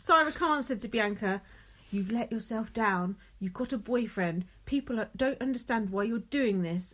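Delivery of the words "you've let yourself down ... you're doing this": normal talking voice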